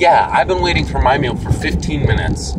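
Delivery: ordinary delivery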